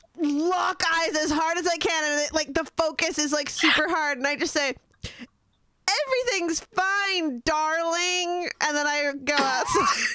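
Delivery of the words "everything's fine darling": high voice, pitch rising and drawn out on fine. Speaker shows the impression they do, an Erasmus impression. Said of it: "Erasmus impression".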